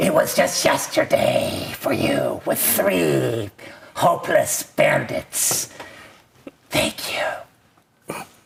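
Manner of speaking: strange, creaky cackling voice rising from low pitch. Describing a game scene, a voice from below speaks: strange cackling voice. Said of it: "a strange, cackling voice below says".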